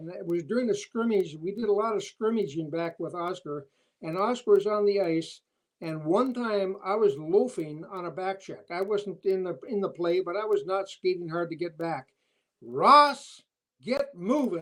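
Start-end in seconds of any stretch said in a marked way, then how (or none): 12.6-14.6 loud, booming, swooping bellow. Retell being called out for loafing on a back check during a scrimmage, imitating a big bellowing voice. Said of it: "he had a big bellowing voice".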